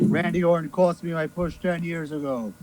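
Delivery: plain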